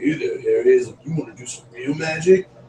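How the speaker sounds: put-on devil voice. Retelling a camp puppet show: imitating the Satan puppet. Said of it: "a Satan puppet, and he's like".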